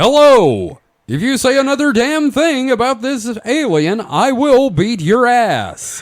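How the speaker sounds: chipper, menacing tone at very high pitch. Speaker demonstrating how a threat would be said, cheerful threatening. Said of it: "but doing it in a cheerful manner".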